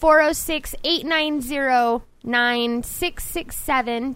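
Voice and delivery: spoken slowly and carefully. Giving out a phone number for anyone who wants to call, slow and deliberate. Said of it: "did i say that slow enough".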